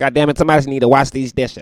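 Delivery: loud, high-pitched hollering. Showing the voice used around the house: Katt Williams voice. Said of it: "it turned into Cat Williams' voice again".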